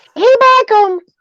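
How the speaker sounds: very high, squeaky cartoon mouse voice, Yorkshire accent.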